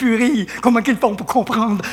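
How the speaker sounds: normal talking voice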